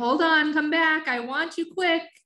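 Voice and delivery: high, joyful, excited calling out. A narrator reads a character calling after a companion to come back, joyful excitement. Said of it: "his voice full of joyful excitement".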